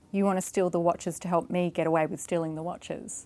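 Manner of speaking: ordinary talk, nothing marked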